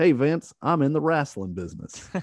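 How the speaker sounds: exaggerated poor Southern accent. Retelling Ted Turner talking to Vince: terrible Southern accent as Ted Turner. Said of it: "I'm going to do a terrible Southern accent".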